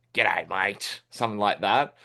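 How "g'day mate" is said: broad Australian accent, lower. Demonstrating how people in the northern parts might speak, broad Australian accent. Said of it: "They might speak a little bit more like this".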